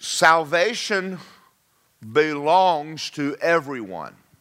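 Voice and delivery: slow, careful, word-by-word delivery. Speaking to listeners, wanting them to get the point, slowly. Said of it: "I'm going I'm to say something slowly".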